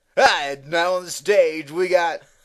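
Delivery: loud strip-club MC announcer voice. Teasing the host about his DJ voice, strip club DJ voice. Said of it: "Your stripper voice".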